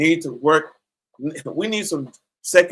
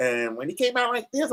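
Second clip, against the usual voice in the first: light, high, barely-above-soft, surprised-sounding voice; 8 semitones higher, 7 dB quieter than usual. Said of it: "He had that Mike Tyson voice".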